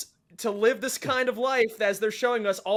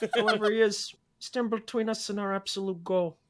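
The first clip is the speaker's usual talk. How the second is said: mock understated film-star voice. Reading a line while attempting a Robert De Niro impression. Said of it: "that was good".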